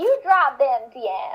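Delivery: slow put-on Southern US drawl. Retelling a post on Kiwi Farms, quote one poster's words to another in a put-on Southern accent. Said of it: "Let me do a Southern accent".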